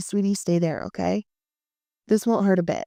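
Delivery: plain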